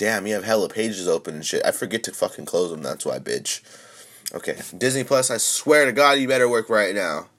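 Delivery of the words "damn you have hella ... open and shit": usual speaking voice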